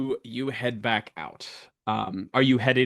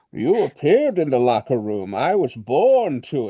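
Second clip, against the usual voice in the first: louder, muffled villain voice that fails; 5 dB louder than usual. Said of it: "I'm trying to do Tom Hardy's Bane and failing wildly".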